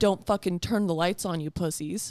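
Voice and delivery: put-on deep, deranged voice. Retelling what T said when Jake went to turn the light on, imitating T's deep deranged voice. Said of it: "deep-ass, like, what? deranged voice".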